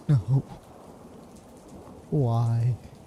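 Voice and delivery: soft, gentle weeping voice. Voicing a library spirit as its library burns: soft crying. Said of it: "the soft cries of that fo-".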